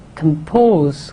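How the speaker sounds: compose with second syllable pose stressed. Explaining meter, come unaccented and pose stressed: stress on pose in compose. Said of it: "Come is unaccented, pose is stressed".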